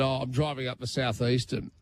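usual speaking voice

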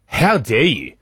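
put-on voice full of complete, appalled disgust. Retelling a man's reaction at the urinals: imitating someone disgusted. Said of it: "looks at me in complete disgust and goes".

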